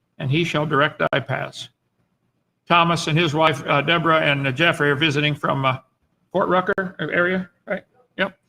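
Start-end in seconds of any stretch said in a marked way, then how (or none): none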